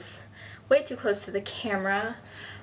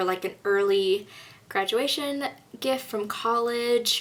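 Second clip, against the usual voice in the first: usual speaking voice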